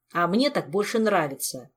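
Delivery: snapped back sharply. Rebuked for whistling off-key, a man snaps back. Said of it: "огрызнулся Кантор".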